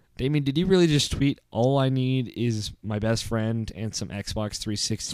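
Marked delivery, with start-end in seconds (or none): none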